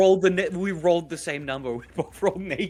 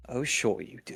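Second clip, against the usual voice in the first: muttered under the breath, much quieter; 5 semitones lower, 7 dB quieter than usual. Narrating a character's reply as he turns to rally his forces: muttered under his breath. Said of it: "he would say it under his breath".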